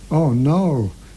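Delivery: moaned lament. A jackal stops dead on seeing a lion approach, moaning. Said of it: "Jackal moaned".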